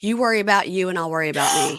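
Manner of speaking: put-on sassy voice. Retelling what a sleepwalking husband said when woken: imitating husband's sassy sleep-talk. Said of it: "he says in his sleepwalking".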